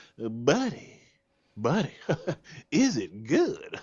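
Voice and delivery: high, swooping voice with laughter through it. Retelling meeting a new neighbor who greets them, Foghorn Leghorn laugh impression. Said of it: "one of them like foghorn leghorn laughs".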